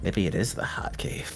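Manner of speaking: imitated character muttering under the breath. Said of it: "under his breath, he's like".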